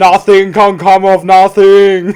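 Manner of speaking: loud, awful, clumsy put-on Austrian accent. Playing a guess-the-impression game, delivering a bad Arnie impression. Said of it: "Are you trying your hardest to do Arnie there?".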